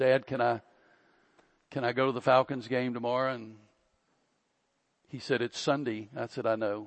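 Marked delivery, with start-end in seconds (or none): 0.0-3.3 put-on nicest, most polite, sweet humble pleading tone. Retelling asking his dad for permission, retelling a nice humble plea. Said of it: "my nicest humblest voice said".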